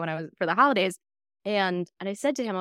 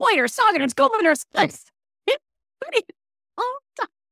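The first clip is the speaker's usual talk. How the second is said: acted-out screaming, much higher pitch and slower; 13 semitones higher, 4 dB louder than usual. Retelling the speaker's brother as a child coming down the stairs, retelling screamed made-up words. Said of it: "he starts screaming".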